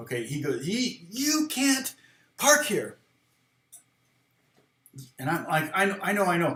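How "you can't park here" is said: acted, slow, drawn-out, high-pitched yelling cop voice. Retelling being stopped while parked, quoting the cop, retelling a cop yelling. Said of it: "He's yelling at me".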